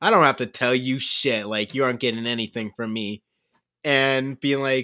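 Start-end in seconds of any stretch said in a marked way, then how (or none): 0.0-3.2 low voice, trying hard to sound stoic. Retelling how Kravio acted at first in the scene, imitating Kravio, mock-stoic. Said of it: "trying to be all stoic and be like".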